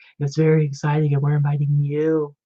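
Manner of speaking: creepy put-on radio voice. Teasing the other speaker by repeating their words in a weird NPR voice. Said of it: "It was like this weird like N P R voice".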